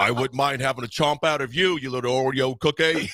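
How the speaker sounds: put-on shark voice. Retelling a Bruce puppet bit done for the kids: Bruce the shark voice. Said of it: "That's actually a really good impression".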